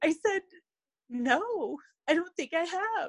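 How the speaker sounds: high, teary voice, on the edge of crying. Recounting being asked if they had dealt with it, tearing up. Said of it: "now I'm tearing up".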